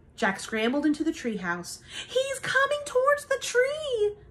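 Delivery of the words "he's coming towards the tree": very high-pitched, urgent cry. A girl cries out as her companion scrambles into the treehouse. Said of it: "Annie cried".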